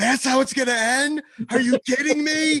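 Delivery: acted screaming. Retelling a breakaway goal in overtime seen at the arena: imitating own scream. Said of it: "I just stood up and screamed".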